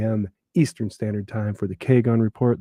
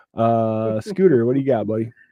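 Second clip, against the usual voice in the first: plain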